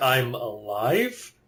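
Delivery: mock confused tone. Imitating the other speaker's greeting: imitating a confused tone. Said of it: "You sounded confused there for a second".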